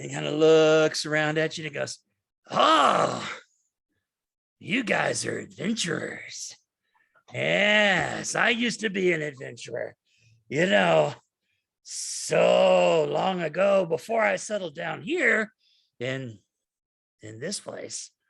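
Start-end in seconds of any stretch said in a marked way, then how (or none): 2.5-18.1 rambling drunken cartoon scientist voice. Voicing a jittery town speaker with an empty wine bottle: trying to sound like Rick Sanchez. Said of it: "I wanna do this like Rick Sanchez".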